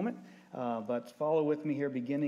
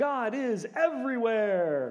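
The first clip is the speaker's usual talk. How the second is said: very high, swooping, eager yell; 9 semitones higher, 6 dB louder than usual. Retelling how a 16-year-old yelled back from the kitchen, retelling an enthusiastic yell. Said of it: "He yelled back with the enthusiasm".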